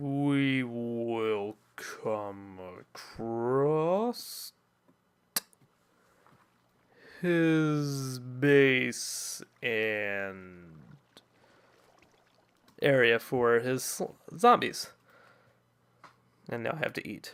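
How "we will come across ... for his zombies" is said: very slow, deliberate word-by-word pace, drawn out. Describing a slow climb, speaking very slowly to match it. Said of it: "I'm going to have to say this very slowly".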